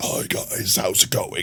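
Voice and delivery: hushed, very quiet, wrecked, hoarse vocal fry. Speaker showing how his voice sounds after he wrecks it, in a wrecked, disgusting-sounding voice. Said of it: "now my voice sounds disgusting".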